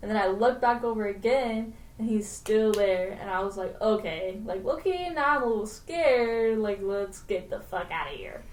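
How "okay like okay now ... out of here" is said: ordinary talk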